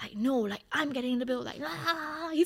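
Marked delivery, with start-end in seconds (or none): 0.1-1.4 pushy, aggressive big-shot voice pitching a fit. Retelling a man insisting on getting the bill, mock-aggressive, pitching a fit. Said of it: "you don't have to be so damn aggressive".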